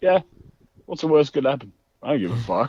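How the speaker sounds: high, scoffing, mocking tone. Retelling what a fighter said when asked about worries: imitating a mocking remark. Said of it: "He was just like".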